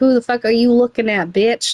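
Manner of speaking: put-on voice of a dog barking angrily. Retelling how a chihuahua barked at people who looked at it: voicing a dog barking angrily. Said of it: "he would start barking at you".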